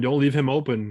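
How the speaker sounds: normal talking voice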